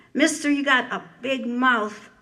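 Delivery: sharp, angry, heated, cutting snap. Reading a poem aloud, voicing Mom at the hardware store: snapping angrily. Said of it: "Mom snaps".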